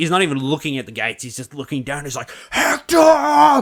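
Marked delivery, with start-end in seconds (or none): 2.5-3.6 very high, very loud, rage-filled call. Retelling the Troy scene at the gates, Brad Pitt as Achilles calling in rage. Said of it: "he's just full of rage".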